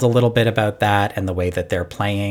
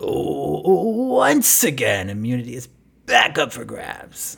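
exaggerated put-on showman delivery, swooping pitch; 6 semitones higher than usual. Mocking how he overdoes the voice this season: exaggerated dramatic voice. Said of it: "he's really like doing the voice a little much for me this season, where he goes".

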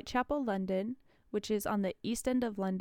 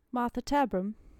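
name pronounced the British way; 4 dB louder than usual. Showing how to say a character's name, in a British accent. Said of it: "You just got to say it in a British accent".

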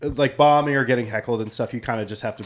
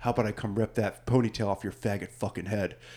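mock grave, dead-serious, menacing, threatening tone; 3 semitones lower, 9 dB quieter than usual. Retelling a heckler's threat at a show: imitating a heckler turning dead serious. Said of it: "he got real serious".

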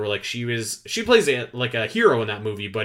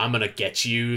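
put-on deep, menacing voice. Explaining why the actor would be perfect casting for Ridley, do a deep, menacing Dave Bautista voice. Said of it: "very deep and menacing".

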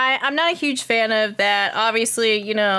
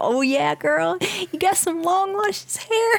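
mock whispering, higher pitched; 8 semitones higher than usual. Imitating someone in a video who brushes your hair: imitating a whisper. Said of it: "whispering into the mic, like".

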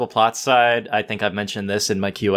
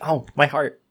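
usual speaking voice

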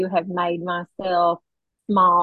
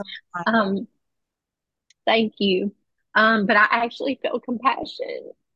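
tearful crying, voice breaking up on the words; 3 semitones higher than usual. Speaking to an audience and sponsors, crying with voice breaking. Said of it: "I can't believe I'm crying".

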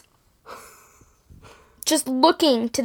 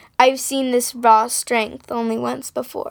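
usual speaking voice

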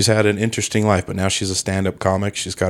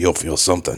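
put-on gravelly British tough-guy voice; 3 semitones lower than usual. Playing a character for another speaker: Jason Statham voice. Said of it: "I'm Jason Statham".

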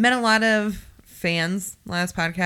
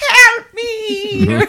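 very high, very loud, shrill witch voice; 10 dB louder than usual. Speaker recounting how they would call out for help, in a witch voice. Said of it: "did you say it like a witch like".

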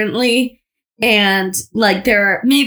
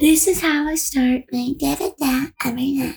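put-on breathy influencer voice, quieter; 5 semitones higher, 5 dB quieter than usual. Mocking daily-routine videos on TikTok, speaker imitates an influencer in a breathy voice. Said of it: "Breathy voice".

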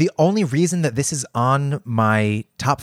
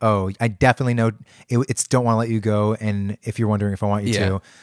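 normal talking voice

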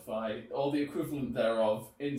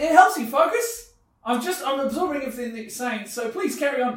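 shouting, higher and louder; 13 semitones higher, 11 dB louder than usual. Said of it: "you are yelling".

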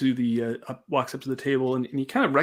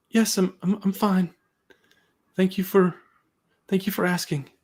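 anxious, much higher pitch; 7 semitones higher than usual. Playing a hall host answering visiting adventurers, anxious. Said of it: "You seem awfully anxious".

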